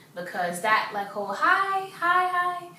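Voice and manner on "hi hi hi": very high-pitched voice. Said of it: "how low my voice sound".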